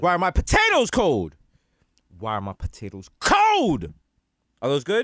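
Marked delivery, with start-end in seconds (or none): 0.0-3.9 angry, furious delivery. Actor at a table reading, repeating takes of one line: angry line reading. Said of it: "I really feel the anger".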